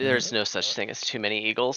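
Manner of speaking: plain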